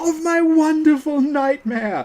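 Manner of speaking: shrill, piercing, very high, drawn-out scream at full volume. Retelling how a game character suddenly screams: Mikolash screaming. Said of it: "he suddenly screams".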